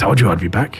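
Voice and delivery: mumbled aside. Narrating the group passing through, the narrator gives Zala's words to the Durga, muttering. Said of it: "you just hear her mutter to the Durga".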